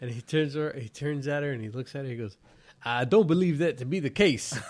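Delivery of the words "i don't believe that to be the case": loud, booming cartoon rooster voice. Retelling what a coworker answered in a meeting: Foghorn Leghorn-like voice. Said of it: "What is he, Foghorn Leghorn?".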